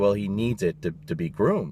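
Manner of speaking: ordinary talk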